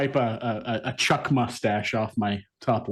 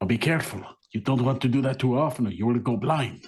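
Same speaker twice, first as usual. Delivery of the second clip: whispering in a put-on voice. Voicing a character leaning over to warn another: whispering in character. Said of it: "just kinda whisper to him".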